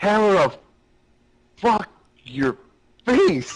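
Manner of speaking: mock very high, slow, stretched-out shout. Retelling the hit that excited him: imitating his own past slow yell. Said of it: "I said it kinda like that, like, really slowly".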